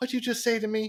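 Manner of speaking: soft, very high-pitched voice. Describing a movie interrogation scene, the speaker imitates a police chief's really high voice. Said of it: "he's got this really high voice".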